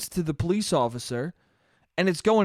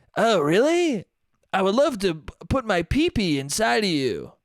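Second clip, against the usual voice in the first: creepy put-on old-man voice. Mocking a scene, answering a fake little-girl voice, in a creepy old man voice. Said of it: "with a creepy old man going".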